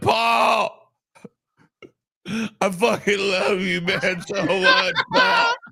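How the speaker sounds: very slow, high, drawn-out tearful blubbering and sobbing. Retelling a drunk friend sobbing on the couch: imitating someone sobbing. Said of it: "T J's crying, literally, like, sobbing on the couch".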